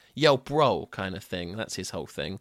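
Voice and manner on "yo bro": New Jersey dude-bro voice. Describing a beach-goer dude-bro character: Douche New Jersey dude-bro voice. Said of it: "sort of New Jersey sort of beach goer".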